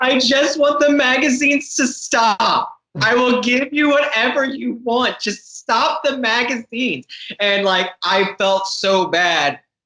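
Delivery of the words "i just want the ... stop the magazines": play-acted very high sobbing through tears. Retelling a sales call where the woman on the line starts crying: imitating someone bawling. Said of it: "She just starts bawling".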